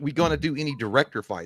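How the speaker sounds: ordinary talk, nothing marked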